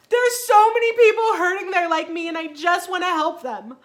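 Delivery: put-on crying while talking. Retelling own words to a husband while bawling: retelling own past sobbing. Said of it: "I'm bawling my eyes out".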